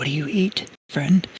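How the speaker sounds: whispering in character. Speaking in character to another character: whispering in character. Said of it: "Gravel's gonna whisper".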